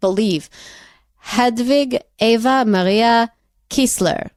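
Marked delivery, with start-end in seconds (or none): 1.2-4.2 a kind of Israeli accent. Asked by the other host to do it again, repeating a name in an Israeli kind of accent. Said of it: "you have to do that again for me".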